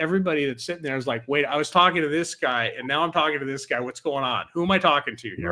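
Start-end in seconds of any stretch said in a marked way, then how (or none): none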